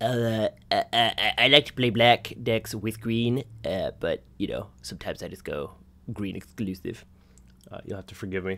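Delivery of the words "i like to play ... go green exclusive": put-on voice of a thirteen-year-old boy. Recalling playing Magic cards at lunch, imitating his 13-year-old self. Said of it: "That was an impression of 13-year-old [name]?".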